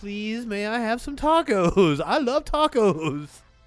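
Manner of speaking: put-on, overly nice, super friendly voice. Imitating how she'd act at the taco truck: imitating Sparkles being super nice. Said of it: "She's like".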